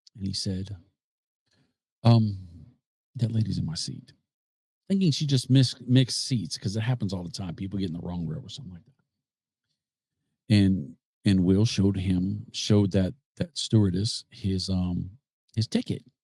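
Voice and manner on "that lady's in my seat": quiet, calm, polite delivery. Telling how a man asked the stewardess about a lady in his seat, imitating a quiet, calm request. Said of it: "very quietly, very calmly, very polite".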